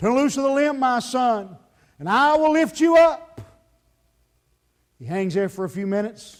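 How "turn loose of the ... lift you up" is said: big, booming, very loud heavenly voice. Telling a joke, the voice from heaven answers a man hanging from a cliff, big booming voice. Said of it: "a big voice comes booming from heaven".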